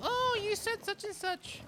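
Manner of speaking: very high, whiny, mocking heckler voice.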